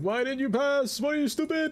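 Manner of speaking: very high, shrill screeching scream. Speaker acting out their dad yelling at football on TV, imitating dad screaming. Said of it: "He's screaming at the TV".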